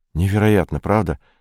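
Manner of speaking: plain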